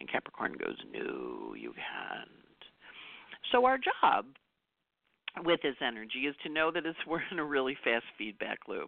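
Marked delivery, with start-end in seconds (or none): 0.9-2.3 very low, deep, soft and quiet voice. Acting out Capricorn answering you back, in a deep Capricorn voice. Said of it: "in that deep Capricorn voice".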